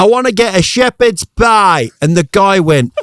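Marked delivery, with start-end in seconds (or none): 0.0-1.9 put-on Northern English Yorkshire accent, pitched up. Retelling the speaker's son prank-calling a scottish bakery, in a put-on yorkshire accent. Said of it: "he put on a Yorkshire accent".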